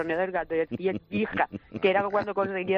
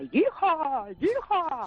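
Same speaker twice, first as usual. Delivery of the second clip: high-pitched, gleeful whooping cheer. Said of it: "su expresión encima era".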